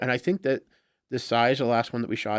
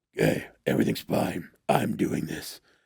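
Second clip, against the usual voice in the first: rough, creaky superhero voice; 7 semitones lower than usual. Retelling recording a voiceover with ten minutes left: Batman voice. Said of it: "I'm talking like I'm Batman".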